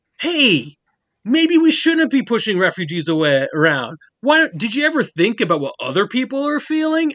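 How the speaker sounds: weak, high, swooping sing-song voice. Discussing rewrites, the speaker mocks a speech about refugees: worst Sam impression. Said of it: "I'm using the worst Sam voice".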